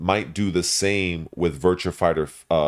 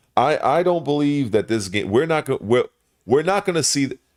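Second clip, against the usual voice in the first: halting stutter, restarting, pitched up; 8 semitones higher than usual. Speaker, in between thoughts about a game's release, stuttering and halting. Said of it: "That's why I'm kind of stuttering".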